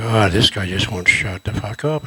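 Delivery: low, deep growl from down low. On set, retelling what Ken Foree growled at him, imitating Ken Foree growling. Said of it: "Ken's growling at me".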